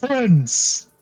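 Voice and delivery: acted giant voice, shouting. Voicing a large creature greeting the party: giant yelling. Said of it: "turns around and yells".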